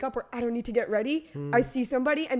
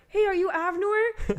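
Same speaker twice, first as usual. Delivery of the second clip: put-on high, tiny, cute, adorable little kid voice; 8 semitones higher than usual. Retelling a little kid who came up asking for a picture, cutest little kid voice. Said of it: "the cutest little voice ever".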